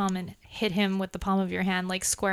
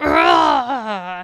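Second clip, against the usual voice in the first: pained creature cry, louder; 9 dB louder than usual. Voicing a monster hit in the back by an arrow: pained monster roar. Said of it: "you hear him go like".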